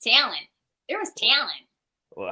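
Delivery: put-on swooping Chicago accent, talent said with extra E. Teasing the other speaker about their pronunciation, imitating their Chicago accent. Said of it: "I die at the way you say things like talent".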